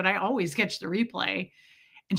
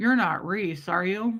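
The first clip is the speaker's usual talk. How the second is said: put-on slow drawl from the side of the mouth. Retelling a woman's greeting, imitating her slow side-of-mouth talk. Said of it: "talked really slow out of the side of her mouth".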